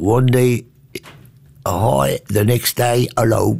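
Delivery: put-on English accent. Speaker quotes a woman's saying, imitating English accent. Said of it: "Met haar Engels accent".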